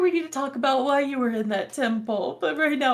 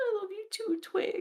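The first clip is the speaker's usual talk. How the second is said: mock crying, quieter, higher, faster; 7 semitones higher, 11 dB quieter than usual. Retelling a scene, answering Twig while imitating someone crying. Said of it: "And she's gonna like just crying".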